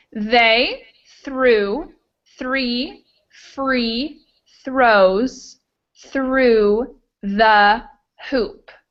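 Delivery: very slow, halting, broken-up careful reading. Reading a phrase once through before a faster pass: slow reading. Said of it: "I'll read that phrase once through slowly".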